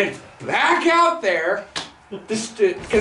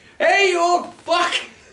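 very high, hollered, taunting yell; 9 semitones higher than usual. Retelling what a friend yelled at an old man: imitating a friend yelling. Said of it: "So Alan yells out".

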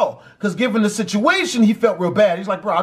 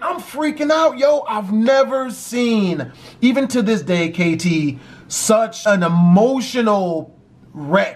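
ordinary talk, nothing marked

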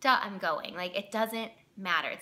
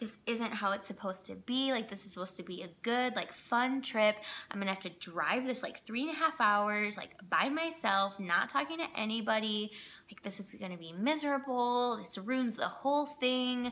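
plain

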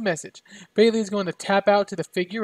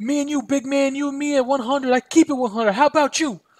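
scream pitched higher; 6 semitones higher, 3 dB louder than usual. Recapping a wrestling brawl, the narrator quotes a wrestler taunting a rival: screaming Enzo impression. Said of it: "It's my impression of them".

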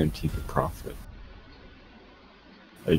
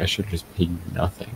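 plain

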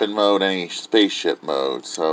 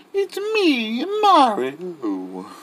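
very high, swooping, sing-song cartoon voice. Showing a toy from the box: Mario impression. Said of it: "A Mario impression".

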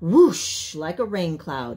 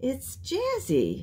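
very quiet, small, high-pitched voice; 7 semitones higher, 6 dB quieter than usual. [name] answers Madam Mina in class, in a very quiet voice. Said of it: "I say in a very quiet voice".

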